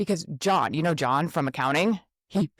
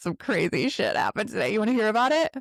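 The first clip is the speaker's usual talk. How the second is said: playful, easygoing, lightly amused tone; 4 semitones higher than usual. Showing a calmer way to tell friends a story: light, amused retelling. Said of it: "Do you hear how I still own".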